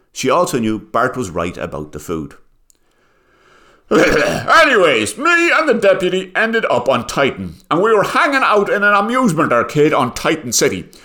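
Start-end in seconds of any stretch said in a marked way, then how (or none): 3.9-10.8 very high, pompous, self-important sheriff voice. Narrator reading a Martian sheriff telling his story, pontificating Martian sheriff.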